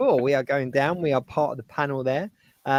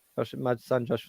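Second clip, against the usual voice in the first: plain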